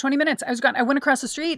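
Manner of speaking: high, loud, panicked voice.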